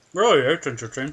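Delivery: talking with something in mouth. Reacting to an answer about loving train sounds: talking with an ice cube in mouth. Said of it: "I had an ice cube in my mouth".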